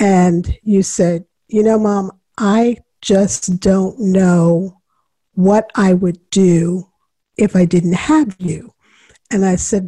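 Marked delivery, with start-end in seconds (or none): none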